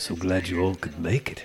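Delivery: put-on British accent, somewhat Welsh. Quoting a TV show line in a put-on British accent, kind of Welsh. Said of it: "I have a British accent, but it's also kind of from Wales".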